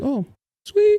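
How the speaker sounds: mock cheerful, very high, sugary falsetto squeak.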